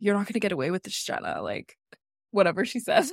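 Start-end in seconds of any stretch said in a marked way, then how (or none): 0.0-1.4 play-acted, smug, self-satisfied taunting tone. Retelling Aaron's confessional aimed at Jenna, mimicking Aaron's smug tone. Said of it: "being like so smugly".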